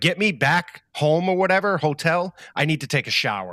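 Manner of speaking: mock frantic, worked-up, panicky outburst. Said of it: "he starts freaking out".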